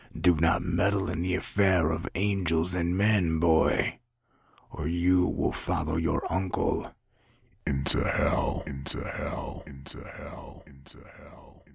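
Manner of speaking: slow, harsh, rough, shredding guttural voice. Narrator voices the backwards voice from the tape warning the boy: rough guttural voice. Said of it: ""The morning star of all angels, come to redeem your falsehood." / Its rough, guttural voice still contained a lot of strength, / guttural voice still contained a lot of strength, enough to give it an".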